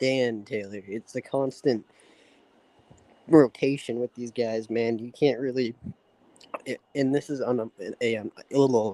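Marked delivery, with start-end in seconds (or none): 5.0-8.9 stuttering, stammering speech. Speaker talking about the team losing players, stuttering. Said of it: "I'm fucking stuttering".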